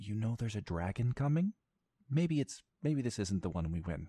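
stealthy voice. A narrator voices someone hidden in the trees warning of a dragon, trying to sound stealthy. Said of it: "a voice that's trying to be stealthy".

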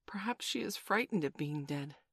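plain reading voice

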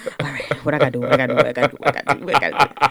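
acted-out panicky voice. Acting out going to your room after a parent's guilt trip: imitating someone panicking.

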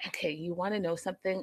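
very soft, hushed half-whisper. Talking about how a man dances, suddenly half-whispering. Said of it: "And I don't know why I'm whispering".

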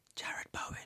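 hushed, barely there, very quiet whisper. On a show, naming a player who will excel, whispered 'Jared Bowen'. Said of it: "I have to say it quietly".

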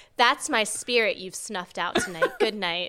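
mock flat deadpan delivery. Imagining handing a cupcake back to a partner, acting out a deadpan line. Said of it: "looked at my partner deadpan and just went".

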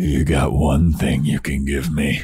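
very creepy, low delivery. Retelling a scene where Oz answers her: imitating Oz creepily. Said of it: "very creepily is like".

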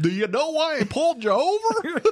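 very high, loud, silly, put-on clown voice. Joking that police officers should talk in a clown voice. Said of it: "they have to talk in a clown voice".

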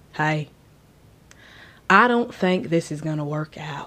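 put-on deep, low country-boy voice with country accent. In a made-up scenario, Charles comes to the listener tending their wounds: country accent. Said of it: "I don't know why he's country".

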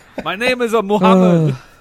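loud, high-pitched stage announcer voice. Picturing a four-year-old Jean-Claude Van Damme on stage: imitating Jean-Claude Van Damme. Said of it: "a four-year-old Jean-Claude Van Damme goes on stage".

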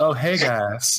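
friendly put-on Texas accent, barmaid voice. Describing a friendly character met in a new game, Texas barmaiden accent. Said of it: "a Texas barmaiden accent".

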